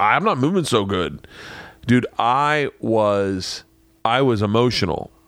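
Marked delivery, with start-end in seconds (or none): 0.0-1.3 put-on voice of a wounded, hurt buffalo. Retelling a hunt, voicing the shot buffalo: voicing a wounded buffalo. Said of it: "this guy's like".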